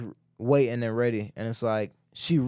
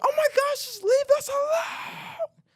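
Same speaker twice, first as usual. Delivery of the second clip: mock angry screech, shrill, pitched way up, drawn-out. Retelling how a lady answered their knocking at her door, imitating a woman screaming. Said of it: "She started screaming".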